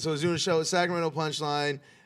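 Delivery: quick-fire, rushed, rattled-off. Starting a story for the truth-or-lie game, said really fast. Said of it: "You said that really fast".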